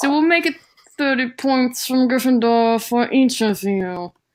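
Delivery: put-on sneering teacher voice. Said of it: "with a gleeful sneer on his face".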